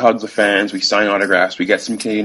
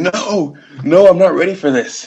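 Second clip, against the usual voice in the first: mock yell, high-pitched, with stretched, drawn-out words; 9 semitones higher, 4 dB louder than usual. Recalling watching the anchor leg near the finish line, retelling a yell. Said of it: "i'm yelling".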